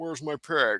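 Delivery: creepy horror-killer voice. Telling co-hosts about a movie, quoting it around the house: Nicolas Cage 'Where's my pig?'. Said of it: "You sound like Buffalo Bill".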